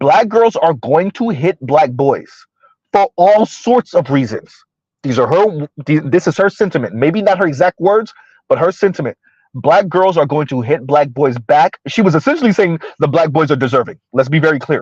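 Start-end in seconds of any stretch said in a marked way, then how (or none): 0.0-4.5 slow, careful, deliberate delivery. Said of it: "Mister Z is gonna talk slow so I can be very deliberate".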